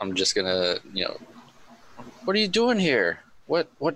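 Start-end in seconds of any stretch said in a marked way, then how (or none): 2.2-4.0 put-on elderly woman's voice, high-pitched. Game master voicing a character in a tabletop game, old lady voice. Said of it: "all in old lady voice".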